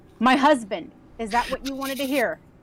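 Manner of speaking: lifted voice, not shouting. Voicing Lena, answering who she is looking for: louder, but not yelling. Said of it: "not yell, but more loudly than they were speaking".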